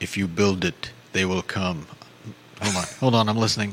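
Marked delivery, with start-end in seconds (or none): 0.0-1.9 slow voice, every word drawn out. Performing a requested Field of Dreams line: James Earl Jones impression. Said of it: "Will you do the impersonation".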